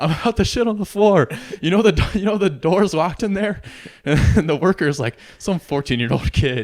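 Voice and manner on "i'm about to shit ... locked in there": put-on yell, much higher. Retelling what an old man yelled to a young worker, retelling a yell. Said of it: "He yells".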